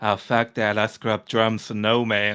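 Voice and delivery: put-on Cajun accent. Describing a Cajun Marine from The Pacific, the speaker quotes him in Snafu's Cajun accent. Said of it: "do the Cajun accent right there".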